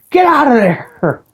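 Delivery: high, slow, screaming yell. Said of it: "by screaming at people".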